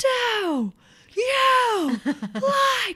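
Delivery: put-on shrill, very high, loud child shrieking word by word. Retelling how a child screamed each word at the speaker: imitating a child screaming. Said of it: "the child started screaming every word".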